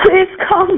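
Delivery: tearful, sobbing voice.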